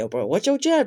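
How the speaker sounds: loud, high cartoon voice. Redoing his voice-acting line from the video, in Jeremy the Plane voice. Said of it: "I did the voice for Jeremy".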